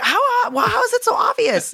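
baffled high squeak.

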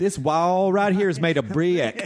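slow, high Mississippi drawl. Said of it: "they add syllables to single syllable words".

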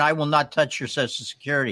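normal talking voice

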